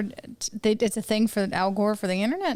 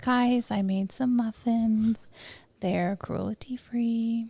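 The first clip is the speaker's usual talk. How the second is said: put-on yoga-voice organic mom persona. Doing a bit with a podcast co-host, in an organic mom voice. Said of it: "a little bit of the organic mom".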